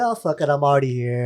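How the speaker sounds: ordinary talk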